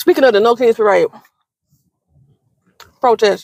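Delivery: speaking while eating, chewing with food in mouth. Speaking to y'all into the mic mid-meal, talking while eating. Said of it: "I'm sorry, I'm eating".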